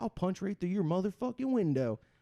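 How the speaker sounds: high-pitched, angry, threatening yell. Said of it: "he's just standing there yelling at me".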